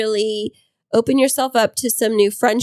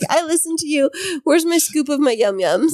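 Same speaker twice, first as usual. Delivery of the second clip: high-pitched dog character voice; 5 semitones higher than usual. Telling what their dog Clover seems to say back to them, voicing Clover the dog. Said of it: "She's like".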